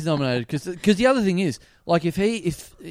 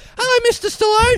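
put-on puppet voice, higher and louder; 6 dB louder than usual. Acting out Dickie Knee greeting Sylvester Stallone: Dickie Knee voice. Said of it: "a ball of electrical tape pop up and go".

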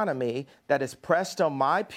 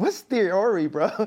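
put-on British accent, higher; 3 semitones higher, 4 dB louder than usual. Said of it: "You actually have quite a good British accent".

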